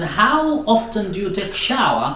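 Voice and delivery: ordinary delivery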